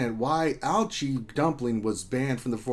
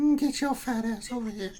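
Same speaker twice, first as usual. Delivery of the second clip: creepy, very high-pitched; 10 semitones higher than usual. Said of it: "It's like Herbert from Family Guy".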